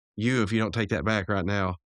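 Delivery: normal talking voice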